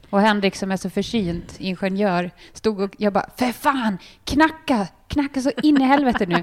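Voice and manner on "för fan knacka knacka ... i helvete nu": high-pitched shouting yell. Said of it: "och skriker där på Arlanda".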